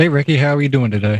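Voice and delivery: insincere, fake-sounding tone. Greeting another speaker before the recording starts: fake-sounding greeting. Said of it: "sound really fake".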